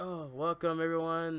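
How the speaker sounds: flat, unvaried, one-note monotone delivery. Retelling how early video intros once sounded: imitating own monotone, low delivery. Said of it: "so, like, monotone and low".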